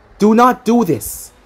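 ordinary delivery

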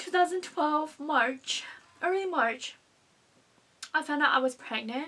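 on the edge of tears. Telling viewers a personal story after apologizing, starting to cry. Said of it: "I'm already starting to cry".

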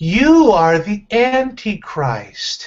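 deliberate, spelled-out speech. After offering to say it slowly for the other person, say it slowly. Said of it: "Do you need me to say it slowly?".

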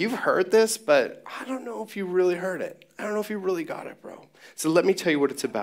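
mocking tone. Paraphrasing Jesus's teaching about what was said long ago: imitating Jesus being sarcastic. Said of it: "making a sarcastic statement".

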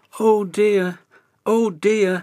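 said through a yawn. Reading a story aloud, voicing the character as he finally starts: yawning. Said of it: "he yawned".

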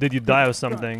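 ordinary talk, nothing marked

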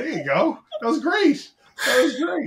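high, loud voice, laughing while speaking.

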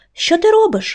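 very high, hurt, tearful outcry near tears. Narrator reading a story, the butterfly struck by the fire: exclaiming, nearly crying. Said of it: "вигукнув він, ледь не заплакавши від образи".

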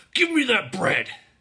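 grunting. He pulls a girl's pigtail, demanding the bread, grunted. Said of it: "Dow grunted".

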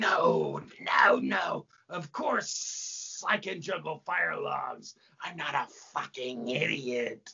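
slow, snake-faced demon woman character voice. In a stage play, a demon answers the master's challenge, snake-faced woman demon voice.

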